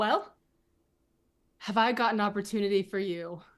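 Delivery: courteous, diplomatic tone. Stepping forward to greet a man who responds to courtesy: polite and diplomatic. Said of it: "be very diplomatic, of course, and very polite".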